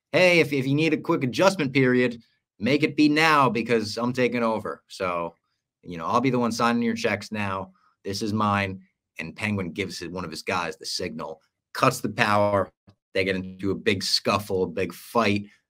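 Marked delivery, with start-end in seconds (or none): none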